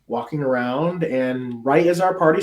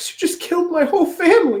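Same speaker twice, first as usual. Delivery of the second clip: very high, quavering, trembling voice; 4 dB louder than usual. Retelling a session, voicing a young boy who answers a question, imitating a trembling voice. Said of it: "with a trembling voice says".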